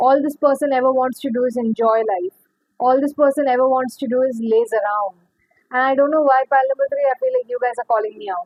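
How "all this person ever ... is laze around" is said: usual speaking voice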